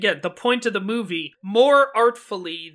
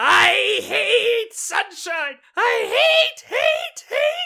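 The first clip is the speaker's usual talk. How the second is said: put-on very high, very slow, rising drawn-out screech. Recalling a character's send-off in a movie, retelling Mim's scream. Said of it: "Martha Wentworth is just screaming".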